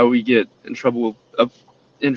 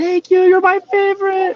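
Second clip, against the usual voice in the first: mock very high, gushing, thrilled child's squeal. Retelling how kids react to a thrown ball: imitating kids screaming. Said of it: "start screaming".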